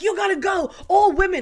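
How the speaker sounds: very high, loud, furious angry outburst. Retelling how a woman stood up and ordered a man to leave: mock angry outburst. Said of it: "she just went off on this man".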